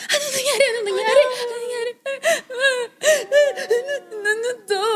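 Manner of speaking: high, panicky, frantic mom voice.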